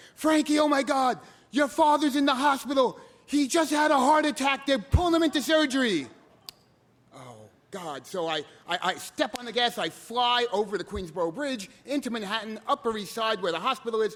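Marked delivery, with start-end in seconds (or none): 0.2-6.1 mock screaming, high and loud. Retelling a panicked phone call about a father's heart attack: imitating a woman screaming. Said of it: "she's also screaming".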